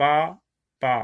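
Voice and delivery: gentle, slow pas, a pause, then pas. Showing how one speaks to children, slow pas, pas with a pause between. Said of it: "tout doucement pas, pas. Vous voyez, on s'arrête un petit peu entre les deux unités de son".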